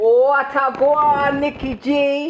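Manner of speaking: Jamaican accent, patois speech. Greeting a co-host the Jamaican way: Jamaican accent. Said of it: "let me say it in Jamaican".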